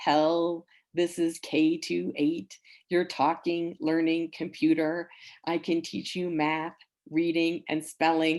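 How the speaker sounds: slow, flat, droning robotic computer monotone. Mimicking an educational talking computer introducing itself: K-28 computer monotone. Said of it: "it spoke in this very um, monotone voice. And I'm going to mimic it here for you".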